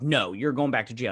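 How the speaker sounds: normal talking voice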